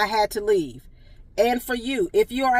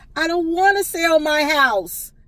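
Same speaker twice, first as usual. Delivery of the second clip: put-on high, loud, slow, distressed, distraught elderly voice. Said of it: "she immediately dropped to the ground and she said".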